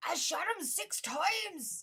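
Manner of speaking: squeezed from throat, very slow. Trying the movie line after being told it needs a throat trick: throaty Loomis impression. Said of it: "you got to do like this thing with your throat".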